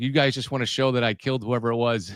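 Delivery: ordinary delivery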